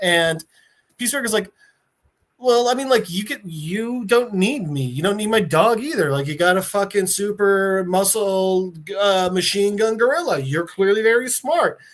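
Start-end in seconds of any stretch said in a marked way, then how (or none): none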